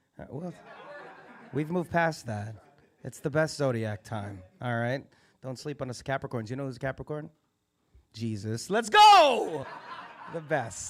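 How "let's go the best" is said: very slow, drawn-out, swooping, rousing shout. Hyping up Capricorns to the audience, yelling. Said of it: "I'm sorry for yelling".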